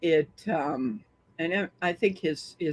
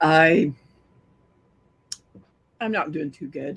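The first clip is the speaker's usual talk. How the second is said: rough, scratchy, hoarse voice, louder; 5 dB louder than usual. Answering a greeting and a question about feeling okay: scratchy, hoarse voice. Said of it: "My voice is a little bit off".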